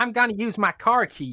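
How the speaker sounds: put-on southern American accent. Comparing accents with the others, in a put-on american accent. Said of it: "That's how I'd say it in American".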